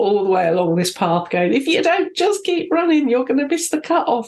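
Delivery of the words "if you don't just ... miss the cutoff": acted shout, higher pitch. Retelling how a supporter at a race shouted: imitating someone shouting. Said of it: "he just shouted at me".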